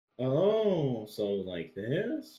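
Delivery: voice climbs at the end on "this". Showing the habit the other speaker just described: rising pitch at sentence end. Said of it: "go higher in your voice towards the end".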